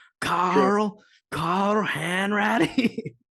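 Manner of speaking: put-on East Coast accent, drawn-out name. Speaker tries a character's voice while a co-speaker teases the attempt, Carl Hanratty impression. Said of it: "and this is your best impression".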